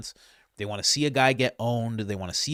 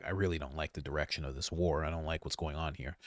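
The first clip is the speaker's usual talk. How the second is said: calmed-down, settled, low, soft voice; 8 semitones lower, 11 dB quieter than usual. Describing how a man talked once he had calmed down, imitating him calmed down. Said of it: "after he calmed down".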